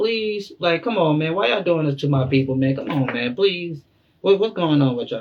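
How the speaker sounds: put-on begging. Explaining what a passage means by plead, acting out the wrong reading: mock pleading. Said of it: "not plead with them like".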